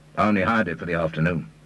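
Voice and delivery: ordinary talk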